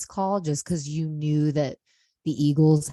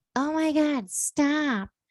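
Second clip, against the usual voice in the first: put-on very high, drawn-out, annoyed drunk woman voice; 11 semitones higher than usual. Retelling a drunk Niner fan who turned on him, imitating a salty drunk woman. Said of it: "she's super salty mode because she's drunk".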